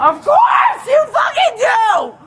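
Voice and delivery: angry, furious, slow, rising, heated tone. Arguing with an officer who asks for id: yelling angrily. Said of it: "If you don't stop yelling".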